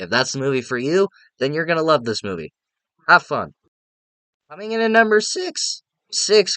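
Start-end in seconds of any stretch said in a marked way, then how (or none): 4.5-6.6 voice cracking and breaking up, very high. Counting down a movie ranking, voice cracking. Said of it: "God, my voice".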